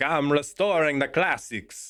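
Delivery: slow, high, bad Italian accent. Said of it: "you would need a bad Italian accent".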